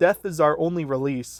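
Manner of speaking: ordinary talk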